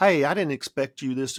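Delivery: put-on strong Southern accent. Recalling coming home from school and what she said: imitating a really southern accent. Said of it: "it was like a really Southern accent".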